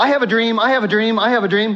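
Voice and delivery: eager excited voice. Retelling the chief baker telling Joseph his dream, acting out stoked excitement. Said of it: "He's like stoked".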